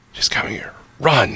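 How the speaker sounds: soft, breathy, barely-there whisper. Narrating an approach through a forest, a hidden figure speaks in a quiet voice. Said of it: "you just hear this quiet voice".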